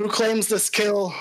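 calling out at a high pitch. Narrator voicing a rider who pulls up to the group on horseback, shouting. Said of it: "start shouting".

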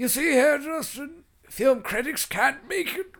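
very high, loud, put-on old man voice. Repeating a professor's line about film critics: old man voice. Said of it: "You gotta say that in an old man voice".

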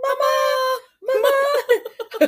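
shrill, insistent, very high repeated calling out. The speaker breaks off a story as Archie calls out; imitating Archie calling Mama. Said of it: "Archie's like".

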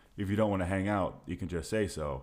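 ordinary delivery

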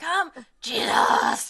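eager, growling, high shout. Describing how he yells during the lunch prayer, imitating a growly yell. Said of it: "this really like growly way he says Jesus".

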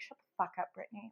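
muttered under breath. Recalling cursing at a TV show cast member, retelling muttering under breath. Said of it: "I literally was like screaming curses at the TV".

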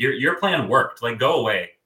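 put-on annoyed tone. Retelling own reaction to seeing a contestant cry: retelling being annoyed. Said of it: "I just got so annoyed".

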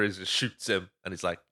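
ordinary talk

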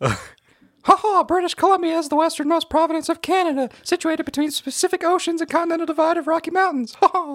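very high, loud cartoon mouse voice. A home assistant answers in a Disney character's voice, Mickey Mouse voice. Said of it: "pick whatever Disney character you want to voice".

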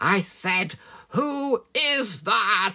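very slow, scary, drawn-out, menacing delivery. Retelling a scene where he's on the phone: imitating a scary character. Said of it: "he's going".

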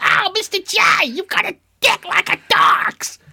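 very high, loud, squeaky voice. Acting out Harley Quinn talking to the Joker: Harley Quinn voice. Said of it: "Harley Quinn's all like".

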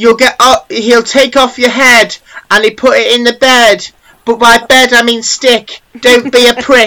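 loud, high put-on Cockney accent. Improvising a rhyme as a bit with a friend, Cockney accent. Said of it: "Why'd you go Cockney?".

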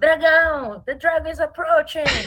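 loud, high warrior battle cry. Dressed as a warrior in the queue, re-enacting her past self: retelling a shout.

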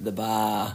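bar pronounced with Boston accent. Hosts throwing on accents for a short phrase, in a Boston accent. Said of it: "Throwing our Boston accents on".

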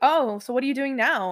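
normal talking voice

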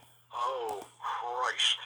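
rough, deep, gravelly exclamation. Speaker retells what they heard a man say, in Ronnie Etchison's gravelly voice. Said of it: "he had a really gravelly voice ... just like that".

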